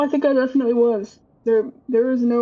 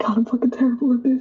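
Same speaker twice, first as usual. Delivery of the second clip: self-mocking laughter, chuckling through the words mid-sentence. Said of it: "just fucking laughing to herself like".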